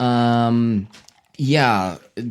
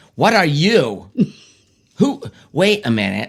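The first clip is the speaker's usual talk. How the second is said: put-on hillbilly voice, higher pitch; 5 semitones higher than usual. Acting out a word from a word game: hillbilly-like voice.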